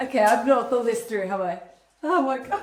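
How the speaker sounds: laughter breaking into the speech, giggling. Setting up a tree without having thought it through: laughing while talking. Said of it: "I can't stop laughing now".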